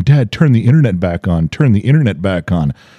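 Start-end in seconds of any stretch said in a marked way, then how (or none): none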